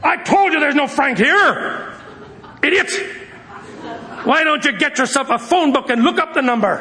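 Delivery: high, sharp, annoyed man's voice.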